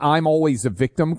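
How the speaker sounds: plain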